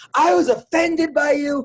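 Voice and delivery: offended woman's high, drawn-out screaming. Speaker retelling a woman who came over screaming at them, retelling her screaming. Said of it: "and screaming at me".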